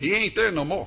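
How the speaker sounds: put-on old-style Cajun accent. Making a point clear to listeners, in an old Cajun accent. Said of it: "If I can use the old Cajun accent".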